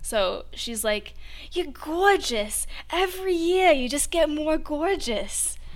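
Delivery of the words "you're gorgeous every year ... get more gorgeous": put-on heavy Brooklyn Bronx New York accent, loud and high. Quoting a woman's compliments at Thanksgiving, thick Brooklyn Bronx accent. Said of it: "she has like a New York accent, like very, very Brooklyn Bronx".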